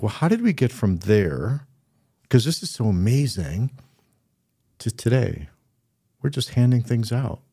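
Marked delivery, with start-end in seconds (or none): none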